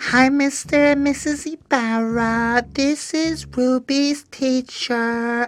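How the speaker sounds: very high, slow, patronizing teacher lady voice.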